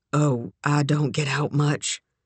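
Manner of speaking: ordinary delivery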